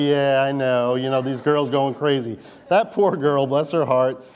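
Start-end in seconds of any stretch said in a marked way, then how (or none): none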